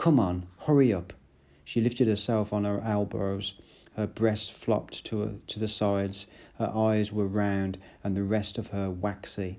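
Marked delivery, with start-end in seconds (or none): 0.0-1.1 through gritted teeth, louder. Narrator reads the first-person speaker, flinging her clothes to her, through gritted teeth. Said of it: "said through my teeth".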